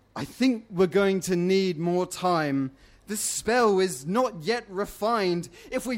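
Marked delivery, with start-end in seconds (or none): none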